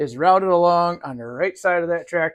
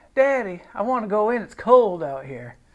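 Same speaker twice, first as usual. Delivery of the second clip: put-on Southern accent, put on; 3 semitones higher than usual. Voicing what the cat is saying: voicing the cat in a southern accent. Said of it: "She speaks in a southern accent like that".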